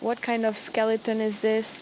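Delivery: ordinary talk, nothing marked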